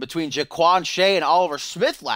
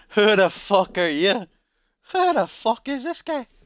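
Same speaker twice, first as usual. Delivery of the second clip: best-effort put-on Irish accent, pitched up; 6 semitones higher than usual. Wrestling commentator attempting an impression mid-show: Conor McGregor Irish accent. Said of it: "My best Irish accent".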